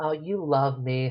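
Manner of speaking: imitated Brooklyn woman's voice. Retelling a scene, the speaker voices the woman's line in a Brooklyn woman's voice. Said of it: "this Brooklyn woman's voice".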